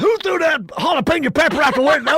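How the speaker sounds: very high, very loud, shrill booming scream. Retelling a cop at a traffic stop: imitating a cop screaming. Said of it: "he's screaming at my buddy Chad".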